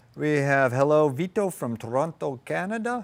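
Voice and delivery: fake, mock Mexican accent. Reading out viewer greetings and hometowns: put-on mexican accent. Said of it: "as I say that with, like, a Mexican accent".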